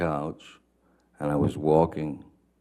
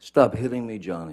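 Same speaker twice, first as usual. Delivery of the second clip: high-pitched, freaked-out, upset, pleading cry; 6 semitones higher than usual. Recounting the screaming heard from twenty feet away, imitating Miss Heard's freaked-out scream. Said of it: "her best um, freaked out, upset voice, high pitched".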